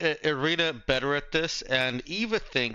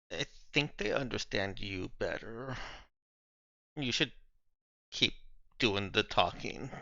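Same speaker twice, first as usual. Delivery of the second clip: murmured, low, quiet aside; 4 semitones lower, 8 dB quieter than usual. Eva falls back a little to speak to Cherry, speaking quietly. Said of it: "to say to Cherry quietly".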